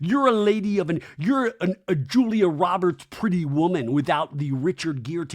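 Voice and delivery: ordinary talk, nothing marked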